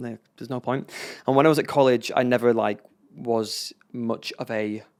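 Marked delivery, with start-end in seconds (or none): 0.0-0.9 put-on tearful, crying voice, quieter. Retelling calling mum and dad after being cut: imitating own past crying. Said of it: "and just crying, going".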